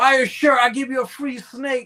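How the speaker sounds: loud, high attention-grabbing hollering. Retelling selling snakes and shirts at a table: retelling own yell. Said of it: "I was yelling".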